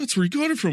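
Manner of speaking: high, loud, excited, blurted realization. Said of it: "and I was like".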